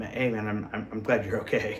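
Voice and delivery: ordinary talk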